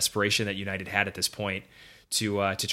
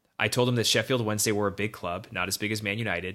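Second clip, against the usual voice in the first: usual speaking voice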